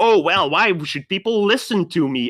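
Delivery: silly, zesty, goofy put-on little voice. Telling someone about their workshop video, mocking their regular zesty voice. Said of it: "your regular zesty voice like".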